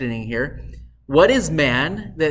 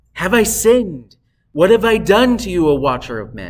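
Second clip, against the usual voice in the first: sad, anguished, weighed-down, burdened tone; 3 semitones higher, 4 dB louder than usual. Showing how a passage should be read, as someone in anguish speaking to God. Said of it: "this should be read as if someone that is in anguish".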